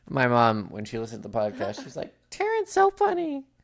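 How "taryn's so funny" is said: sugary, cutesy put-on voice, very high-pitched. Quoting mom's reaction to the podcast, cutesy impression of mom. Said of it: "That is my impression".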